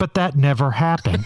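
put-on storybook narrator voice. Debunking a claim with a joke: put-on narrator voice. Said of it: "Here's my narrator voice".

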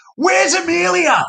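very high, over-the-top put-on child's shriek. Retelling how a young boy at a game shouted for his sister, imitating a child screaming. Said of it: "screamed in exaggeration".

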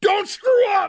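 play-acted scream into the mic, very high. Retelling screaming into the microphone at a man doing an update, retelling a scream. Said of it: "I screamed into the microphone".

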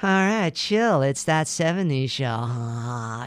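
put-on laid-back, chill stoner drawl, "show" stretched out. Pitching promo reads for a Fox show, in a stoner voice. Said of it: "we need like a stoner kind of".

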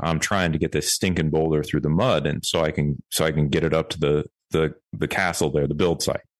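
ordinary talk

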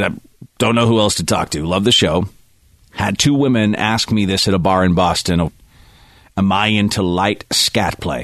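ordinary talk

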